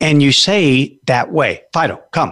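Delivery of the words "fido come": firm, certain, commanding, no doubt in it. Calling a dog to come, in a firm, certain command. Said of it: "Notice in my voice, the outcome is not in doubt".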